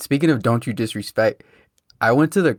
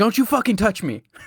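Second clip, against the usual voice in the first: put-on loud, aggressive yell, pitched higher; 9 semitones higher than usual. Retelling a stranger's words in an argument between two cars, imitate a loud, aggressive yell. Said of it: "like loud and aggressive".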